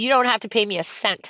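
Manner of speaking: ordinary talk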